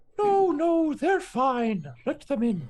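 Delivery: very high, swooping, downcast, dejected voice. Game master voicing someone inside letting the players in, dejected. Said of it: "Kind of dejected".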